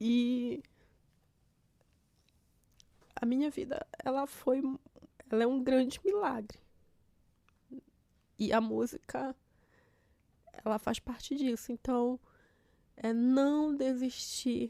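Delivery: crying while talking. Speaking on a podcast after apologizing for crying, crying while talking. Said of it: "Me desculpa se eu tô chorando aqui".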